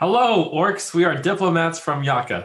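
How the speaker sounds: calling out. A diplomat calls out to a group of orcs, in a raised voice. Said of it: "I raise my voice and I say".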